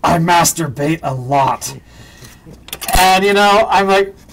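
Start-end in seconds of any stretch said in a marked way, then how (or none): 0.0-1.7 mock whisper, much slower. Speaker retelling what an actor whispered when asked his secret, imitating a whisper. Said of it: "he leans over and he whispers".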